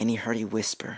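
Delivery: ordinary delivery, nothing marked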